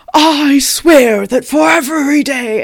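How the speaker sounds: very slow, furious, loud, bad French accent. Retelling a threat made at a sentencing: imitating an angry vow in a bad French accent. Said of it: "he's doing this in French".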